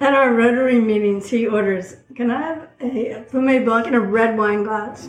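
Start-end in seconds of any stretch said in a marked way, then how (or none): none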